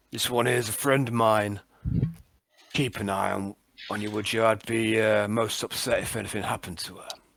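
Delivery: private, close-up, confiding tone. Speaking in character into a friend's ear: speaking quietly. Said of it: "but talk quietly into her".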